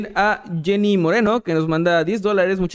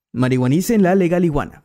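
narrator-style announcer voice. Saying a viewer's name as requested, in a narrator voice. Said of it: "¿cómo narrada?".

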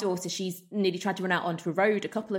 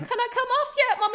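put-on very high little child voice; 4 dB louder than usual. Mommy retelling what he'd call out while doing his time, in a little voice. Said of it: "a little voice that goes".

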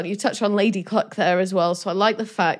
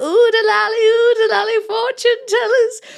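very high fake female voice, "lally" drawn out; 14 semitones higher, 5 dB louder than usual. Retelling Robin disguised as a fortune teller to trick a prince, Robin's fake voice. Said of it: "Robin does a fake voice to try and make it more convincing".

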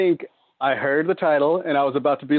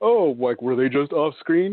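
sarcastic, negative put-on mocking tone. Arguing both characters should die, speaker mimics people with the opposing argument: mocking negative voice. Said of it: "there's no need to do a negative voice".

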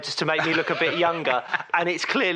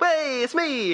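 mock cheering voice, higher; 10 semitones higher than usual. Redoing his own self-cheer from the intro: imitating his own self-cheer. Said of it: "I sort of self-cheered".

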